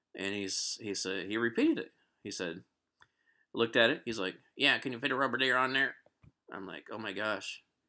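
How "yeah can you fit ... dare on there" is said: terrible fake Southern accent, fast. Retelling a man's repeated question she couldn't understand, in the worst southern accent. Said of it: "the worst southern accent that you could possibly uh, ever even come across".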